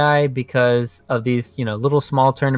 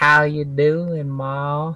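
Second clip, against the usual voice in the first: imitated Southern accent; 2 semitones higher than usual. Showing another speaker the southern accent they slipped into, southern accent. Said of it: "you went into your southern accent".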